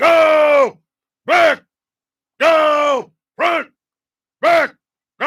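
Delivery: loud, very slow, drawn-out drill sergeant scream. Retelling a drill sergeant screaming orders at him, retelling a drill sergeant's scream. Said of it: "And he's screaming".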